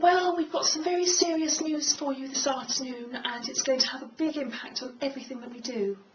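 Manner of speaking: high-pitched tone of voice. Demonstrating one sentence in two ways, first in a high-pitched voice. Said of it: "a high tone voice".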